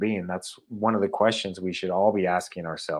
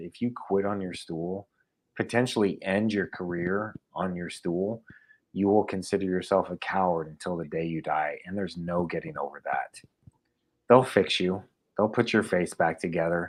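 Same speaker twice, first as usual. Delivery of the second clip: ordinary talk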